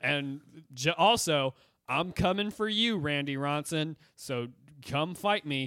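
mock wooden, stiff, slow cue-card line reading. Retelling a character reading lines off a cue card: imitating stiff cue-card delivery. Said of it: "that exact level of energy".

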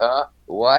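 ordinary delivery

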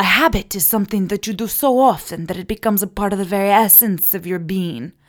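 put-on thick Portuguese accent. Retelling a young tennis player's answer: imitating a thick Portuguese accent. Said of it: "and his thick accent, he says".

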